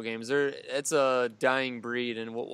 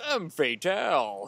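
arcade game announcer narration voice; 4 semitones higher than usual. Remembering an old arcade game, doing the arcade announcer voice. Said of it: "The arcade narration".

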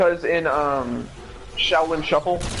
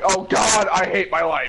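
mild, yelled, scream-like cry of despair; 4 semitones higher than usual. Playing a game with a teammate, unable to put the fuses in, screaming. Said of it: "Don't scream".

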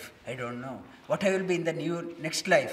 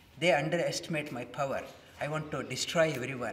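normal talking voice

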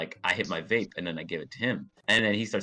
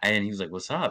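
ordinary talk, nothing marked

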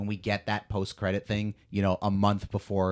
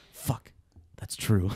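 muttered movie-star style delivery. Quoting an actor's delivery from a show scene, Idris Elba under his breath. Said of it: "delivery from Idris Elba under his breath".

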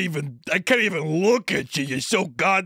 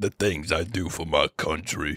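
very low, slow, drawn-out rumbling voice; 14 semitones lower, 4 dB quieter than usual. Retelling a movie scene, quoting its lead: super low Vin Diesel voice. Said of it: "his voice is, like, super low".

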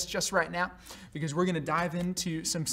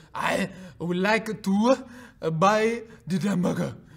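put-on slow delivery with a French accent; 5 dB louder than usual. Retelling a film scene of a phrase lesson: Clouseau's French accent. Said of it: "with less of a French accent".

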